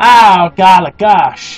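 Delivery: low, put-on western cowboy voice. Showing how cowboys would say it: imitating a cowboy. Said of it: "you don't get your cowboys going".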